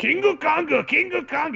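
very high yelling repeated over and over. Imitating Mister Taco yelling the Japanese name of King Kong: imitating a yell. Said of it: "He just keeps yelling it over and over".

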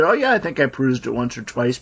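play-acted, plainly ironic, sarcastic swooping tone. Retelling own earlier reply about the book: retelling own sarcastic remark. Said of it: "being sarcastic".

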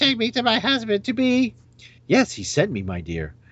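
high, swooping female robot voice. Voicing a character in a made-up scene, the speaker does a female robotic voice. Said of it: "I guess I should do a female robotic voice".

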